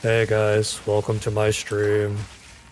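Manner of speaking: slow, droning monotone with no inflection. Demonstrating a stream intro in a flat monotone. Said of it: "someone doing a monotone voice".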